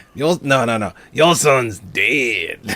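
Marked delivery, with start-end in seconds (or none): 1.1-2.8 fake rough raspy voice. Correcting another speaker's movie line: gravelly Slappy voice. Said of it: "You're doing it much better than I am".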